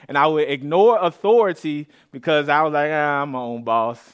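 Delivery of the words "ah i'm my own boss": ordinary delivery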